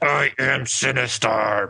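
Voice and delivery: robotic eighties voice synthesizer sound. Describing how bad the call sounded, imitating the arcade game: Sinistar voice. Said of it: "that Sinistar game from the arcade where the guy's like".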